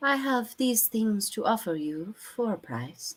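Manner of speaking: soft, high, softly spoken peddler voice. Narrating a game, the speaker voices a merchant offering her wares: soft-spoken merchant voice. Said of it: "She says".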